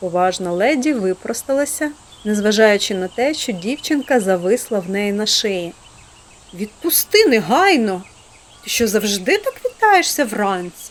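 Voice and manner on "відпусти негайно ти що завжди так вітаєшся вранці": surprised, astonished, taken aback tone. Aunt Polly speaks to Pollyanna, who has just hugged her, surprised. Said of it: "здивовано додала вона".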